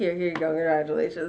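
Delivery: acted uncomfortable tone. Retelling an uncle handing over money: imitating uncomfortable uncle. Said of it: "He looks so uncomfortable".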